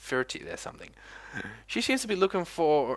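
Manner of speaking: ordinary delivery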